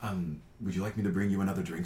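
calmly collected tone. Voicing the waiter Diego offering a guest another drink: calm, composed waiter. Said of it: "he just very calmly kind of collects himself".

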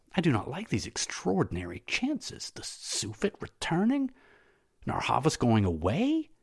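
soft muttering under the breath, slightly high. Spendius addresses his master after the riders gallop away, murmuring. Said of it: "murmured Spendius".

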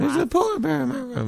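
mock, very high, panicked, frightened little-kid cry. Retelling running downstairs as a very young child: imitating his scared child self. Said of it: "really scared the shit out of me".

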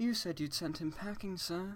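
quiet, hurt, wounded, slightly high voice. Reading a story character's line to the Fat Controller: quiet, hurt voice. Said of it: "in a quiet, hurt voice".

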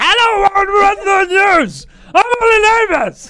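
full-volume yelling, very high and very slow. Speaker recalls speaking louder until it became yelling, acting out the yell. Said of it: "speaking a bit louder became yelling".

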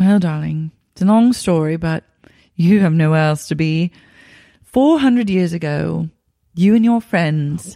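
put-on British accent. Continuing the acted scene as Lisa explaining: Lisa Vanderpump British accent.

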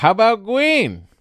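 put-on very high small child's voice. Retelling what a child says when picking up a ball: imitating a child's voice. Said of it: "he likes to pick it up and go".

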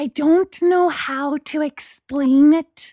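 confiding, conspiratorial, secretive tone. Reading a story, a neighbor speaks of the tenant next door: hushed tone. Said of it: "Maggie said in a hushed tone".

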